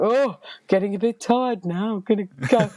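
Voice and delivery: botched put-on Liverpool accent. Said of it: "I can't do an accent".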